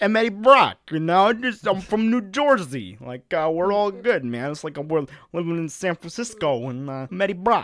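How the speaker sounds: bad, fumbling put-on American accent. Mocking a film actor's accent as Eddie Brock: imitating Tom Hardy's Eddie Brock accent. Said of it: "He's just like".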